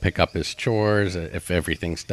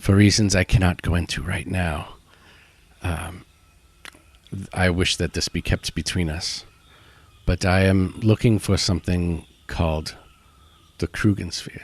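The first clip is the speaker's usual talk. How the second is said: hushed whisper in a put-on voice. Character confiding a secret request to another party member, whispering in character. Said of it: "So he'll whisper to Inete and say".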